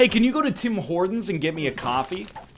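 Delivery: put-on Canadian accent. Speaker comparing Americans and Canadians, doing an impression of a Canadian. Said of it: "Here's my impression of a Canadian".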